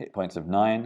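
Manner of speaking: ordinary delivery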